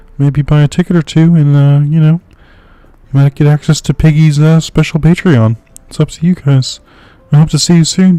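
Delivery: put-on whispered frog puppet voice. Announcing one last show to save the theater, in a whispered Kermit voice. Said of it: "I don't know if I can whisper in Kermit's voice".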